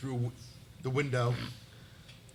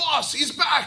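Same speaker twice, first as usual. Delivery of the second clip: high, loud calling shout. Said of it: "and calls out".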